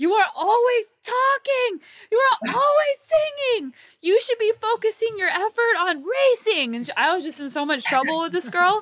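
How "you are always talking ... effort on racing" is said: high, mock-yelling in a German accent. Retelling how a teammate started yelling at you, mock-yelling in german accent. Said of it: "started yelling at me in her German accent".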